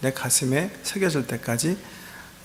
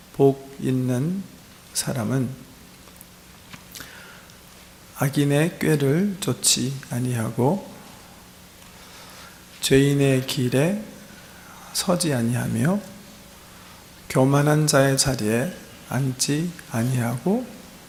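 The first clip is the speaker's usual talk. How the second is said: slow, unhurried reading, word by word. Reading Psalm 1 aloud as an example of good speed, slow reading. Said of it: "이 정도 스피드면 참 좋습니다".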